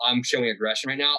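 ordinary delivery

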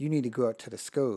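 hushed, half-whispery, kept-down stage whisper. Speaker retells a call from a woman in a doctor's office, in a half-whispery voice. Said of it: "she like in this whispery type of voice".

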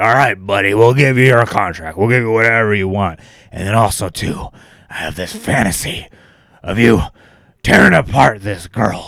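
loud, booming wrestling-boss voice. Retelling what the boss said to Brock: Vince McMahon voice. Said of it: "You do a great Vince McMahon voice".

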